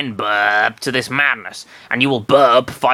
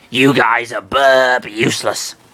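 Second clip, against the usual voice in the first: very deep, slow, dragged-out monster voice. Narrating a story, voicing Belch complaining to the others: deep Belch voice. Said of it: "Doing this really deep voices really hurts my voice".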